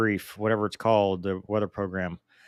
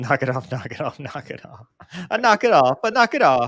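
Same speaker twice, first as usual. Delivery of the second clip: put-on Italian accent, repeated over and over; 4 semitones higher, 4 dB louder than usual. Chatting about old games, the speaker breaks into an italian accent. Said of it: "Mover Italian accent".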